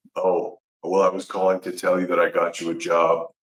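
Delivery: put-on low, flat, level, unvarying monotone. Retelling the call offering a job: imitating Tommy's monotone. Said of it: "He put it very monotone".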